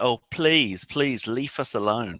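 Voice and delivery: pleading tone dripping with sarcasm. Speaking in character to attacking plant creatures: sarcastic. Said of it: "Teef sarcastically says".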